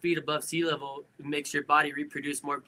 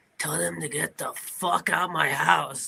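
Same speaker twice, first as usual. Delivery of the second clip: hoarse, rough, creaky smoker's rasp, slow. Retelling what a sick brother told his dad: imitating a hoarse smoker's voice. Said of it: "sounded like he smoked a billion cigarettes".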